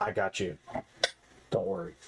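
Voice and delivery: put-on stage whisper, half-whispered close to the ear. Half-whispering reassurance into another character's ear during the game: half-whispering in character. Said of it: "I'll whisper".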